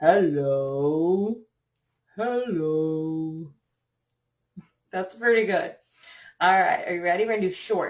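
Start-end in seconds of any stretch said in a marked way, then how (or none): 0.0-3.5 very low, deepest possible, drawn-out voice. Leading a group voice exercise, saying hello as low as possible. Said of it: "Let's say hello as low as we can".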